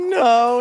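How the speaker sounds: mock crushed, beaten-down tone. Reacting to a witness's answer in court: imitating a defeated "no". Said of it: "She's totally defeated".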